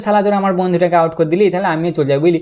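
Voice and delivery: ordinary talk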